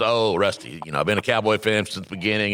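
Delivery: ordinary delivery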